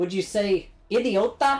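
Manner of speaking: "idiota" said in a put-on Irish accent. Testing whether a spanish word works in an accent, irish accent on spanish word. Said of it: "Does that sound like an Irish person".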